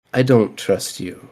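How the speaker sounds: soft, close, hushed whisper under the breath. Voicing a character who pulls a player closer: whispering. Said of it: "And he just whispers".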